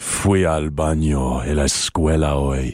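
gravelly, very slow, laid-back, cool Spanish. Saying a line in spanish when asked to make it sound cool: trying to sound cool in spanish. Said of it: "make that sound cool with your gravelly voice and in Spanish".

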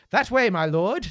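very loud, booming, high, projected theatrical stage declamation. Showing how a spear carrier answers the king: theatrical stage voice. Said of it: "That's the theatre voice".

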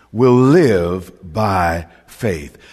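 live stressed in a slow delivery. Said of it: "Emphasis on the word live".

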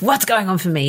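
irritable tone. Showing how one might ask oneself what is going on: cranky voice. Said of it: "in a cranky voice".

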